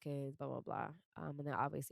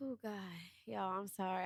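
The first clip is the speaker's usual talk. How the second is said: crying, tearful, voice breaking down; 5 semitones higher than usual. Speaking to the audience after an emotional week, breaking down crying. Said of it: "I said I wasn't gonna cry today".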